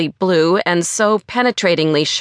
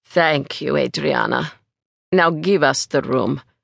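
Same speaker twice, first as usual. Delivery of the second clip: put-on low voice, slight European accent, edges smoothed; 5 semitones lower than usual. A man cuts a woman off mid-sentence, in a vague European accent. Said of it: "his vaguely European accent".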